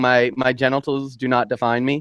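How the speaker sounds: usual speaking voice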